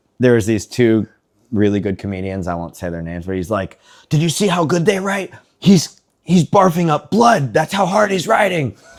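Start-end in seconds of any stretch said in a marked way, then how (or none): 4.1-8.7 very high, wound-up, amped-up raving. Retelling a strict teacher praising two comedians: imitating an angry teacher. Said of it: "so angry all the time".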